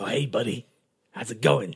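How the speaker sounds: put-on odd, weird-sounding New York accent. Imitating how he greets a buddy, in a New York accent. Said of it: "he's got like a, a New York accent".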